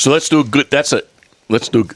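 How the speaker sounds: stuttering false starts. Trying to move the chat on to the next topic, stuttering. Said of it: "I'm stuttering".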